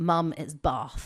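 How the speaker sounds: mock upper-class English accent. Retelling a niece correcting her mother: imitating Ari's little RP accent. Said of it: "she's got a little R P accent".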